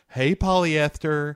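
sudden, popping-out effeminate voice. Retelling what the lieutenant says on the phone: imitating an effeminate voice. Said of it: "his effeminate voice that pops out every now and again".

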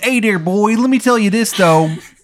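poor put-on Maryland accent. Quoting a man's words during a story, in a terrible Maryland accent. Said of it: "in his terrible Maryland accent".

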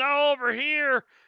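high, loud shout, calling out. The narrator voices Cletus calling out to the party: Cletus shouting. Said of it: "Cletus on the left is going to shout".

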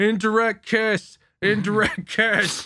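mock slow, stretched-out, squealing scream. Retelling how Dingy reacted when he took a drag; imitating Dingy screaming. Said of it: "Dingy just starts screaming".

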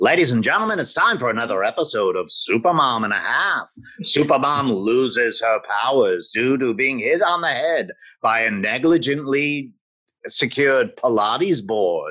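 put-on old-time 1940s radio show announcer voice. Recreating a closing argument once done as a 1940s radio show: 1940s radio announcer voice. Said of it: "I had done my closing argument as a 1940s radio show".

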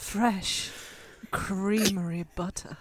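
soft, sultry, sexy, seductive delivery. In a group exercise, [name] is asked to say the phrase sexy: sexy.

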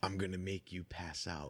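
soft half-whisper, close into the ear. Retelling how a friend handed over a shot: imitating someone half-whispering. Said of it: "hands me a shot and whispers in my ear".

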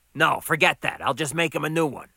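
ordinary talk

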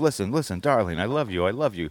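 fast-talking, sleazy, schmoozing patter. Retelling a movie scene, quoting the director: imitating a fast-talking sleazeball. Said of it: "fast-talking sleazeball".

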